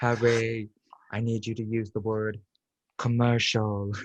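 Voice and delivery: feminine put-on voice. Retelling how a friend called out at dinner: imitating Yazzie. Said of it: "How do you know she sounded like that".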